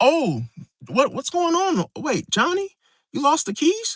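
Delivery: put-on clueless bewilderment, swooping, fake-innocent confusion. Acting out someone pretending not to know about lost keys: imitating feigned obliviousness. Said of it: "Pretends like, oh, like they're in their own world".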